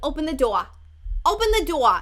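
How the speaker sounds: put-on loud New Jersey mom accent. Speaker recalls a mother in new jersey telling her kid to open the door, in a new jersey mom voice. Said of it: "I took that for inspiration".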